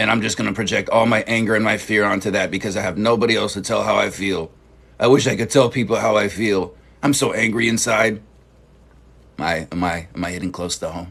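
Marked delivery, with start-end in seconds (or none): none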